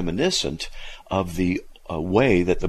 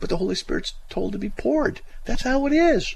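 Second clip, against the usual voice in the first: very high, excited, steadily climbing pitch. Speaker explains baptism with the Holy Spirit, voice getting high. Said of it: "My voice is getting high".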